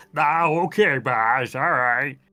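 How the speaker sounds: put-on dumb guy voice. Showing how to voice the one taking the villain's order: stupid guy energy. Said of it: "that stupid guy energy".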